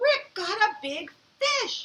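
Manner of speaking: thrilled, very high, loud excited exclamation. Showing listeners how to read a sentence ending in an exclamation point, excited reading. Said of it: "Say it like you're excited".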